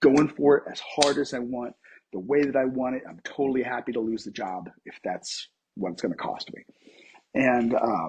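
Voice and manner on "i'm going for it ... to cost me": ordinary talk, nothing marked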